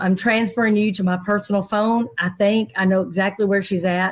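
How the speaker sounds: usual speaking voice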